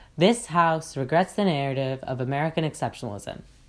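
flat, level, uninflected monotone delivery. Showing how a debate motion sounds with too little inflection, monotone delivery. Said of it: "in a relatively monotone tone as I did before".

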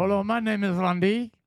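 put-on French accent in a mouse character voice. Saying hello as Randy to the group, mock French mouse voice. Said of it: "It was a French mouse".

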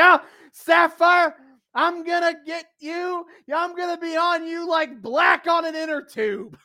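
very high-pitched character voice. Retelling a wrestling promo, answering as Sherri: imitating Sherri. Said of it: "And Sherry's like".

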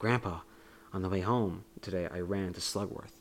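solemn, weighty, very serious, grave delivery. Retelling a movie scene, quoting Charlie to Grandpa: Charlie in a very serious tone. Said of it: "in a very serious tone".

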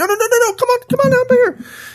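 very high, thin, wimpy voice. Acting out Ahab inviting Ben-Hadad into his chariot: wimpy Ahab voice. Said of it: "Notice I'm doing Ahab's voice a little wimpy".

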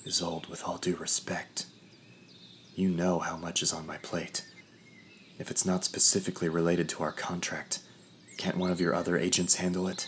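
hushed whisper. The narrator leans close to a raven to speak privately, whispered. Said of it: "leaned in close to the raven and whispered".

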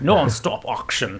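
put-on Cockney accent. Brainstorming how the announcer voice should sound, trying a cockney accent. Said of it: "the Cockney auction".

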